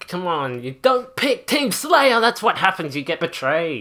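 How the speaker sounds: agitated, heated, loud, worked-up ranting. Ranting about Halo players who pick Team Slayer, worked up. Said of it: "I gotta calm down".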